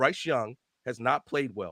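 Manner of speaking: slow, low, deliberate, each word spelled out. Arguing with another speaker who keeps interrupting, saying it slowly. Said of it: "I'll say it slow so you can listen".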